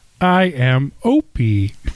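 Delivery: mechanical robot voice. Asked what a robotic voice would say on the show, the host answers: robotic voice. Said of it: "if I was a robotic voice".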